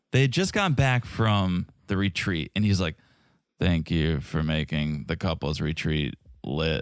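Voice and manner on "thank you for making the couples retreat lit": flat monotone, very low and soft. Mocking Eris after the couples retreat, doing Eris's flat monotone voice. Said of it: "Eris is so monotone".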